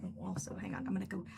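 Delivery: soft unvoiced whisper. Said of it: "I'm gonna go whisper something to Casey".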